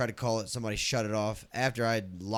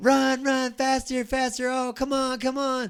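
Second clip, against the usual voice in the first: very high, very slow, drawn-out patronizing, condescending yell; 7 dB louder than usual. Retelling a stranger yelling at joggers: imitating a condescending yell. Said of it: "she was doing it in a condescending way".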